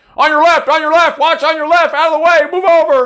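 very high, loud, repeated screaming and shouting. Retelling how passing cyclists yell at them: imitating cyclists yelling. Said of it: "You know how many times we get yelled at?".

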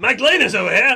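loud calling out. Playing one of the boys calling out in a tavern: loud in-character call.

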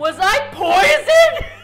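shrill, very high, very loud yelling. Recounting getting violently sick, acting out the speaker's own words: retelling a yell. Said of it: "apparently I start yelling".

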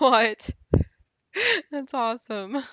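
loud, excited, delighted outburst.

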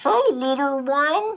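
funny, very high-pitched cartoon voice. Describing how a cartoon character used to talk, doing Scooter's funny cartoon voice. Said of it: "he used to talk like".

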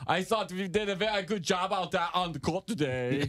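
put-on very high pitch with German accent. Showing how he wants the player to sound: Mo Wagner with German accent. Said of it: "he actually has a German accent".

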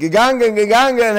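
excited cheering.

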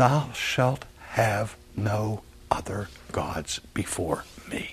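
hushed, soft, slow whisper.

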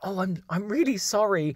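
high-pitched, with put-on innocence. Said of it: "pretend that I didn't know what had happened".

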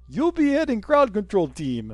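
put-on Russian accent, high and sing-song. Reading an email aloud, the speaker puts on a Russian accent. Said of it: "in a Russian accent".

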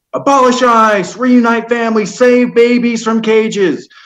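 put-on, high, angry shouted yell. Speaker retelling yelling out slogans after a speaker played a video: retelling a yell. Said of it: "And I yelled out".

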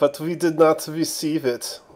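horrible, poor put-on German accent. Playing a character with a put-on accent, horrible German accent. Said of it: "Don't know why I'm German for that".

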